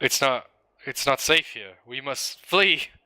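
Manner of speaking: frightened, faltering, stumbling voice. Voicing a game character's line, scared. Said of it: "You sound scared".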